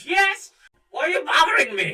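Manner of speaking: shrill, very high, very loud shouted character voice. Voicing Grandpa, a voice answering Finn's call: Grandpa character voice. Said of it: "Grandpa all heard".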